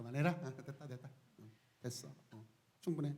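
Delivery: very soft, quiet, low, gentle admonishing tone. Retelling how the Lord calmed wind and sea: acting out a quiet rebuke. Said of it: "조용히 타이르신".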